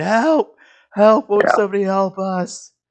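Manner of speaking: panicked screaming. Voicing townspeople calling out during an attack: screaming for help in character. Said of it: "People are screaming".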